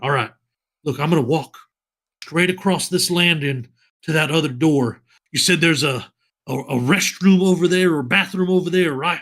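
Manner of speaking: easygoing, lazy, laid-back casual drawl. A bard casually lays out a plan to the group and asks where the restroom is. Drawling, casual planning. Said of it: "[name] - Disillusioned Human Bard, played by [name] / And [name] kind of opens up his shirt a little bit more, / Sword Coast accent is not / Well, I, I'll go across and just kind of like bat my eyes".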